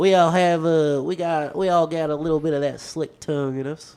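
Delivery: high, loud put-on Kentucky accent. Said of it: "we all talk like this".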